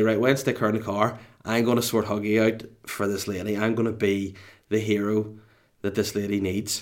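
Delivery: ordinary delivery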